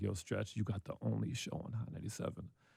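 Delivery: mock muttering under breath. Retelling a remark made in the booth before leaving: imitating someone muttering under breath. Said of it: "under his breath".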